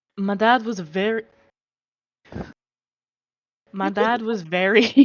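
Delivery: laughing while talking. Trying to finish a line in character, laughing while talking. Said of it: "I'm sorry, I'm laughing".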